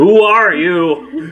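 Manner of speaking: loud, high-pitched calling yell. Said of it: "I want to move into the room and yell out".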